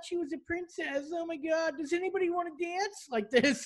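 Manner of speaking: put-on crying voice. Retelling what strippers said the night of a crash: imitating a crying stripper. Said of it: "all these strippers were crying".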